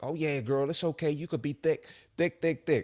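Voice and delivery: mock, sweet-talking, flattering, hyping-up, reassuring tone. Mocking how people hype someone up: imitating people hyping someone up. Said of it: "People gonna gas you up".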